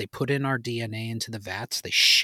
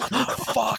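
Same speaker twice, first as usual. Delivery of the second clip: mock, very high, freaked-out, panicked cry; 12 semitones higher than usual. Imagining waking up as a clone in front of aliens: acting out freaking out. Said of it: "you're freaking the fuck out".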